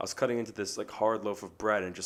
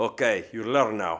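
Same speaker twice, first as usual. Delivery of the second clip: put-on heavy, thick, raised Greek accent, laid on thick; 7 dB louder than usual. Retelling how a man reacted to her cutting her thumb, in a thick Greek accent. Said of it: "he's got this like thick Greek accent".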